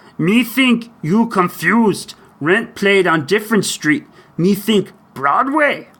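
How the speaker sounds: slow, high-pitched character voice, each word dragged. Answering a fan question read aloud to him; Cookie Monster voice. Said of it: "my best Cookie Monster imp- impersonation".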